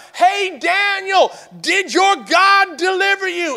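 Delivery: play-acted, very high, ringing calling shout. Telling the Daniel story, voicing the king at the lions' den; retelling a shout. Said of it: "he starts shouting out".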